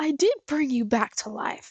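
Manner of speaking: wild, crazy put-on voice. Reacting to a scene, imitating crazy Tails. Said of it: "That's kinda shit crazy Tails would say".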